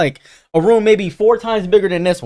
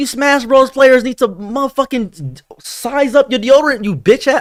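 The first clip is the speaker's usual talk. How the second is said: mock furious, angry rant; 10 semitones higher than usual. Retelling telling panel attendees to use deodorant: imitating own angry rant. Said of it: "I was so pissed".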